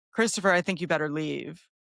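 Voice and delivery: mock no-nonsense, stern, firm tone. Recapping a show scene, the speaker quotes Emily in a mock-stern Emily voice. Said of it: "her stern voice".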